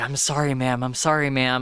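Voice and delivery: mock-demure, put-on humbled tone. Retelling how a man plays along as he is publicly fired: mock-demure apology. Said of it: "looking very demure and looking very like".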